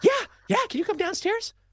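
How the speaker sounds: mock breathless, very high, an octave up, rushed. Retelling a partner's phone call at work, imitating breathless high-pitched voice. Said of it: "she's out of breath, voice up an octave".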